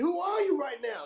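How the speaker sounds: put-on, high-pitched yelling. Quoting a Rocky Three scene to others: Apollo Creed yelling impression. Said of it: "Apollo Creed was yelling at Rocky".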